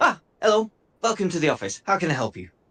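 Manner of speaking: chipper, swooping high voice. Greeting someone at the office, in a chipper young lad voice. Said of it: "a chuppy young lad".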